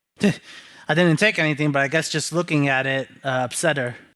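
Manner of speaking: ordinary delivery, nothing marked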